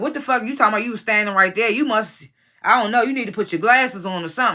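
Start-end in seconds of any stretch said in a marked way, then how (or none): none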